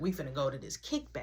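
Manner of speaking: soft whisper under the breath. Retelling telling a brother to get dressed: imitating own whisper. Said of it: "I'm telling him, but I'm whispering".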